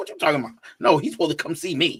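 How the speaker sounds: aggressive, combative, swooping protesting tone. Retelling a first reaction to a daughter's words: imitating own aggressive reply. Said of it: "I was all aggressive".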